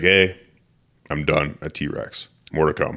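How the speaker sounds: usual speaking voice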